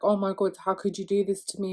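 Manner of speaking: put-on crying, tearful voice. Retelling showing a cheating partner his deleted messages: imitating own past crying. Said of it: "I'm crying my eyes out".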